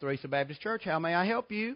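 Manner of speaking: soft, wonderful, pleasant telephone manner. Retelling how Miss Fran picked up the phone when a caller rang, Miss Fran's pleasant phone voice. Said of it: "in that wonderful, pleasant voice".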